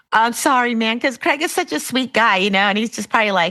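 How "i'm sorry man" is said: sheepish, bashful, shy, embarrassed tone. Imagining a friend stuck in traffic apologizing to another driver: imitating Craig's shy embarrassed apology. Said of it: "getting shy, embarrassed about it".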